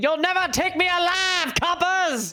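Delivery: very high, shrieked, defiant scream. Declaring an in-character charge at approaching enemies: in-character scream.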